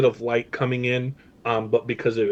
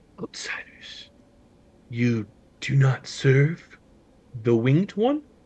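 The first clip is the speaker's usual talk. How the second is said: gentle, mild-voiced delivery. Voicing an unseen speaker who addresses the outsiders among the shelves, very soft voice. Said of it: "you hear a very soft voice".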